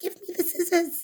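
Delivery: very high, tiny, squeaky crab voice. Narrator reads a little green crab calling from the water, Pa Amma's very small voice. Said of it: "crying in a very small voice".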